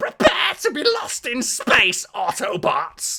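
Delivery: very high, very loud, shrill, drawn-out scream. Describing a game clip of Starscream flying into frame; Starscream scream. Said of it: "where he just screams like".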